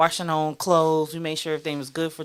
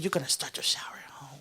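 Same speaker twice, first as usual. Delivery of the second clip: soft, hushed, private whisper; 7 dB quieter than usual. Speaker re-enacts what they once whispered to her, re-enacting own whisper. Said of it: "That's me whispering to her".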